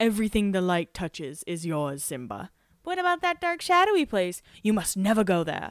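put-on British accent. Recalling the Pride Rock scene, quoting Mufasa to Simba with a British accent. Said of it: "all of a sudden Mufasa has a British accent".

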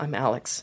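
fake frightened, cold voice. Showing how the character talks in the role: imitating Alex's scared, cold voice. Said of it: "he's scared and cold".

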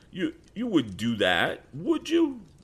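shaky, trembling voice. Narrator reading Sam answering Tom's threat of the police, voice shaky. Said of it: "Sam's voice that had been bold became shaky".

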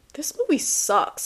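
high, blunt, play-acted remark blurted out. Retelling a loud remark in a theater: imitating saying it loudly. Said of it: "I said it so loud".

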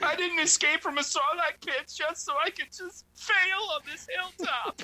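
put-on very high sobbing, pleading crying voice. Pleading with the armor in a game, the speaker does mock crying. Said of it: "I'm just crying into it".

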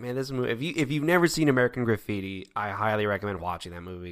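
ordinary talk

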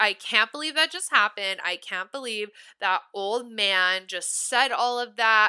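ordinary delivery

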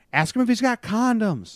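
very high, loud, teasing joking yell. Retelling a pizza delivery, imitating a girl in the back yelling. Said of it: "one of the girls yells".

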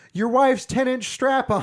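shrieked outburst, very high, very loud and shrill. Retelling what a woman yelled out during a party game: retelling a yell. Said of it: "she just yelled out".

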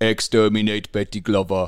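robotic, machine-like alien voice. Teasing a co-host whose voice just sounded odd, doing a Dalek voice. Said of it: "You're giving more Doctor Who than you are F1".

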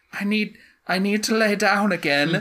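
tired-sounding high voice. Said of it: "these random voices I'm doing".

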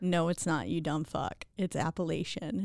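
ordinary delivery

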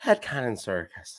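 put-on Irish accent. Imitating the mother saying the podcast's name: Irish accent. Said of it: "in her Irish accent".

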